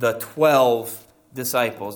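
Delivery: twelve hit hardest, with heavy stress on twelve. Asking who Jesus called and sent in Luke 9, stress on twelve. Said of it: "Did you notice how I stressed the word 12?".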